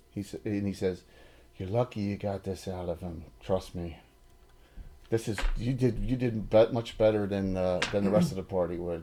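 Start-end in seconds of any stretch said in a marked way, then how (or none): 1.5-9.0 hushed, in-character stage half-whisper. Voicing a character who half-whispers to another character: half-whispering in character. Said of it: "whispers to Tegan".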